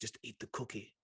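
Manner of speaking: soft, tempting, coaxing whisper. Explaining how Lucifer uses carnal pleasures: Lucifer's tempting voice. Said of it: "It's like that kind of voice".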